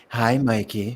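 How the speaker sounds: put-on seductive, flirty sexy voice. Imitating another speaker's greeting: imitating a sexy voice. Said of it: "He's coming at me with your sexy voice".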